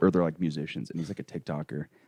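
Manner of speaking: hushed whisper. Talking about the neighbors so they can't hear; whispering. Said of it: "I'm whispering this so they can't hear us".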